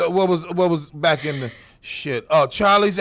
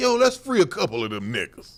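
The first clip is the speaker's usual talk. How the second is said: normal talking voice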